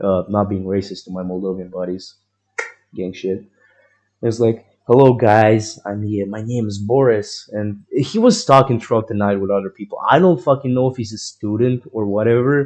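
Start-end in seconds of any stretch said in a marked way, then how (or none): 4.8-7.5 put-on slow, drawn-out, light Russian accent. Retelling a guy arriving at a party: imitating a Moldovan's Russian-tinged accent. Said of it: "a little bit of a Russian accent".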